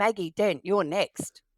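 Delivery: play-acted stern, big, loud voice. Retelling how she called the speaker in while playing doctor: mock-stern big voice. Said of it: "in a big stern voice called out".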